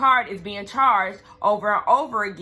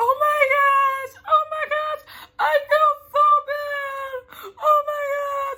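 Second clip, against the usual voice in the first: very high, overdramatic, drawn-out fake sobbing. Retelling how Lisa reacted to the arrest news: mock dramatic fake crying. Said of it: "why is Lisa so dramatic?".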